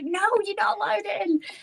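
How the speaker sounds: acted tearful hysterical screaming, very high-pitched. Retelling shutting the husband out of the room: retelling a hysterical scream. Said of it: "I was like hysterical, crying, like screaming".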